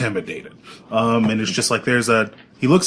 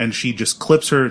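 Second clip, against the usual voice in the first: normal talking voice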